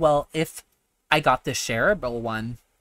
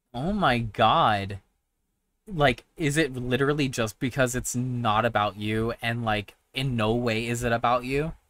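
usual speaking voice

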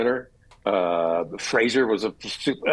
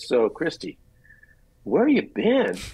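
play-acted breezy, offhand, cavalier, nonchalant tone; 4 semitones higher than usual. Retelling what a prop master said when an actor returned: imitating Victor's cavalier, nonchalant tone. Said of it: "in this sort of cavalier, nonchalant way".

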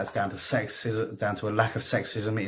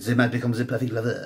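sudden put-on French accent. Reading lore about the paths of the Eldari aloud; French accent. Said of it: "I don't know why I did a French accent there".

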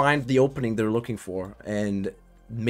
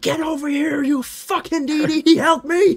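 put-on scream, much higher and louder; 6 dB louder than usual. Watching a game, imagining what Captain Sensible screamed at a teammate, imitating screaming. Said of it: "was screaming".

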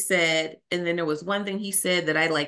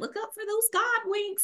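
put-on high-pitched country accent; 5 dB quieter than usual. Quoting a church sister's advice, imitating her real country accent. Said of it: "She's a real country accent".

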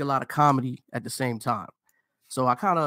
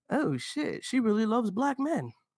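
sing-song, very high, swooping sarcastic tone; 10 semitones higher, 3 dB quieter than usual. Retelling a first reaction on learning about a woman: retelling own sarcastic remark. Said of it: "That's just me being sarcastic".

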